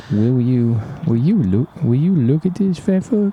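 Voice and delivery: slight, half-there Southern accent in a put-on voice. Building a character called Little Willie, trying his line in a vaguely Southern accent. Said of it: "That still sounds vaguely Southern".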